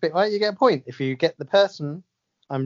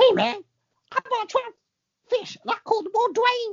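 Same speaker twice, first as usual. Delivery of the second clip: piping, high-pitched celebrity voice. Doing a celebrity impression for a guessing quiz: Kevin Hart impression. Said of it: "It's Kevin Hart".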